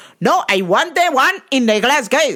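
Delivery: curt, rude, entitled, insistent, high-pitched tone. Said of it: "this rude-ass Indian lady".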